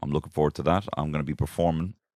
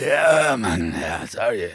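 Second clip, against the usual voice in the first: high, slow, drawn-out speech with voice gone; 7 semitones higher, 5 dB louder than usual. Retelling a festival-goer asking about a balloon: imitating someone who lost their voice. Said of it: "did you lose your voice?".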